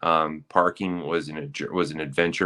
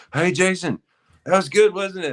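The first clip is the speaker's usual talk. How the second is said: put-on hollered scream, pitched very high; 13 semitones higher, 3 dB louder than usual. Retelling how Casey called out from the other end, imitating Casey screaming. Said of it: "Casey was screaming from the other end".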